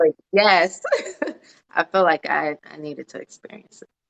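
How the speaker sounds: voice catching, choked up, close to tears. Answering a question about experiencing a biggest fear, about to cry. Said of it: "I don't know why I'm about to cry".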